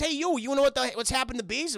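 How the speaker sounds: casual bro delivery. Imitating someone teaching a class about bees: Mark Wahlberg voice. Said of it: "And he goes".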